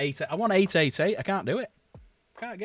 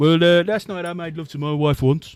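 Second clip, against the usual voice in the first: put-on Brummie accent, higher and louder; 3 semitones higher, 7 dB louder than usual. Telling a joke, voicing the Englishman's reply in a Brummie accent. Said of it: "the Brummie accent".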